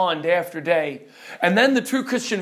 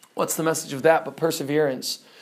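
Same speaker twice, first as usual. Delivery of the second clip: ordinary delivery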